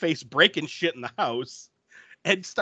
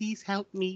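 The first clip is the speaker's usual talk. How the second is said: tiny, soft, shrunken little voice; 4 semitones higher, 8 dB quieter than usual. Narrator voices Kristen grabbing the radio to ask for help, in Kristen's tiny little voice. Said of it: "says in her tiny little voice".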